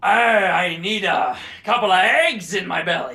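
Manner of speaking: put-on improvised pirate character voice. Improv exercise, answering what a pirate says first thing in the morning; pirate voice. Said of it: "how the heck do you think that a pirate is supposed to sound".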